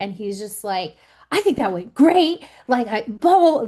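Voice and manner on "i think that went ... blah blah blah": manic, wired, overexcited high raised chatter. Retelling what a husband said after telling the girls: imitating a manic tone. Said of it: "he's being, like, manic".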